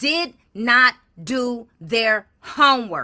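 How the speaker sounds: very loud, full-volume angry yell. At home, reacting to a supervisor's statement, yelling. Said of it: "Yes, I'm yelling".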